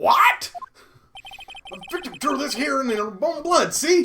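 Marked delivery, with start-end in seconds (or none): 1.7-4.1 put-on heavily overdone Southern accent. Voicing a detective reading a victim's blood message: Gumshoe a bit too Southern. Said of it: "that made him a bit too southern".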